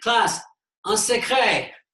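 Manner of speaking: loud, high, called-out voice.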